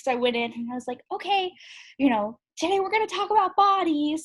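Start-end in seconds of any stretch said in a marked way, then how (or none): 1.1-4.2 very high, little elementary school teacher voice. Retelling how she opened a class with young kids: imitating her elementary school teacher voice. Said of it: "my little elementary school teacher, like, voice".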